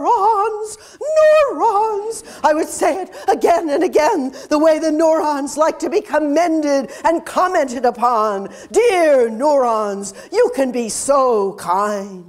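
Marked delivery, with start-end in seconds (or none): 0.0-2.2 shrill, very high-pitched screaming scientist voice. Imagining being a scientist, the speaker screams: screaming in a scientist voice. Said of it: "I would scream in my scientist voice".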